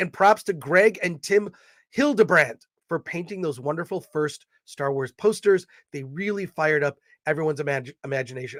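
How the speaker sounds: usual speaking voice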